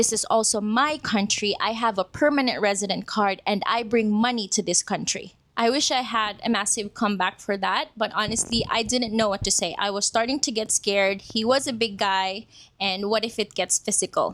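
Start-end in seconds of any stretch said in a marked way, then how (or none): none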